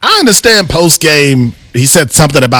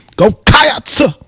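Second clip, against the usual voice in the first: high, preacher-like cheer with "Cats" stretched out.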